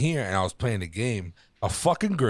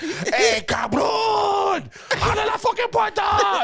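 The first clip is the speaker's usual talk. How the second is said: put-on angry scream, much higher, slower; 5 dB louder than usual. Retelling how a man pounded on the speaker's door, imitating an angry scream. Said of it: "He was screaming".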